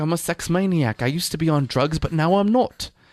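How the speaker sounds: bad high British accent. Retelling own costume party lines: worst Russell Brand impression. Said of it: "It's like the worst Russell Brand impression ever".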